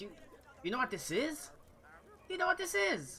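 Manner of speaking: very high, eager, excited game character voice. Voicing a character showing the group an object: excited NPC voice. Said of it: "excitedly say".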